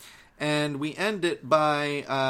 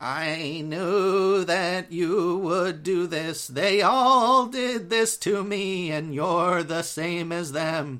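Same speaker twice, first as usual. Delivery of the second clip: trembling, wavering, quavering zombie voice; 3 semitones higher, 3 dB louder than usual. Retelling a story, voicing the ragged zombie woman confronting him, in a wavering zombie voice. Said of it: "she's got this wavering voice to her that's like".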